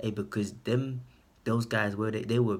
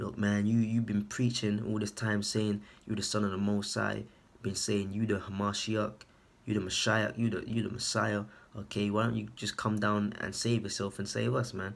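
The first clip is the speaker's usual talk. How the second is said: ordinary talk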